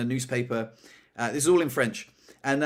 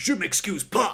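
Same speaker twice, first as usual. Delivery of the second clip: high, angry, unrepentant voice; 6 semitones higher than usual. Retelling how a customer refused to apologize: imitating an angry, unapologetic customer. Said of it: "very angry, very unapologetic".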